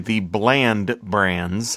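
very slow, deliberate enunciation. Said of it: "so I'm gonna say it slow and deliberately".

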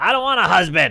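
put-on older woman voice, yelling out. Retelling how an older woman at a bagel shop yelled out: imitating a woman yelling. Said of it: "And she yells out".

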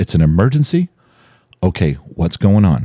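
plain

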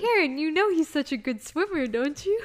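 very loud, high-pitched, mocking teasing send-up. Teasing the other speaker about changing topics: teasing imitation of other speaker.

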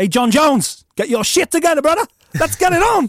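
English London accent.

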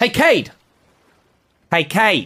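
very high shouted call. Testing whether Malrus reacts to the name, the speaker shouts the name Cade. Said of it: "I just want to shout".

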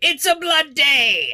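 very high-pitched, loud battle scream. Voicing characters bursting through the gate: screaming.

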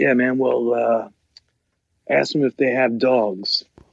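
very matter-of-fact, straight-faced, plain, unfussed tone. Retelling the father's answer from a hospital bed: imitating father's matter-of-fact manner. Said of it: "in his very matter-of-fact ways".

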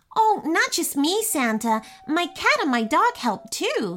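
jittery anxious voice. Quinn, a little elf speaking to santa for the first time, nervously. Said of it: "said Quinn nervously".

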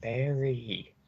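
soft, put-on feminine woman's voice. Narrating a scene where a voice calls out to Barry, female voice. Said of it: "is a female's voice saying".

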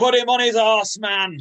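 put-on, shrill, very high, loud yell. Retelling what a man who stood up in his seat shouted, imitating someone shouting. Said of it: "he just stood up in his seat and he just shouts".

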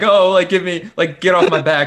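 put-on high-pitched crybaby whining. Imitating a driver complaining over the radio: imitating a driver whining. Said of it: "crying about it".

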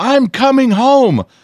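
mock, shrill, very high, tearful crying wail. Retelling a daughter's phone call: imitating crying and screaming. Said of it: "she calls me crying and screaming".

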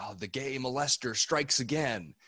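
play-acted mild, angry call, pitched high. Recalling a friend's dad yelling during a snowball fight, retelling an angry yell. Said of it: "he like yelled out like".

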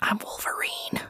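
close, breathy whisper right at the ear. Retelling how someone leaned in close to say a line: imitating a whisper. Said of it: "leans in close and whispers".

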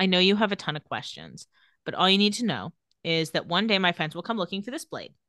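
normal talking voice

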